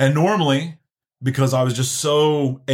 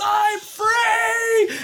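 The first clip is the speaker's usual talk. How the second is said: high, drawn-out scream at top of lungs. Retelling a moment driving alone after crying: retelling a scream. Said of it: "I was screaming to the top of my lungs".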